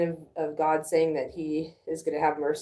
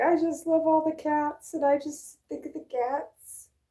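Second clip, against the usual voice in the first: acted high-pitched blubbering, weepy sobbing voice; 12 semitones higher than usual. Telling of the lady who cries about loving cats, act her out, imitating her crying. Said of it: "who cries about loving cats".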